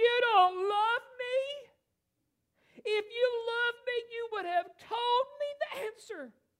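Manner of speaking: mock whiny sobbing, very high, loud wailing. Retelling the story, voice Samson's wife complaining to Samson in a crying voice. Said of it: "in a crying voice".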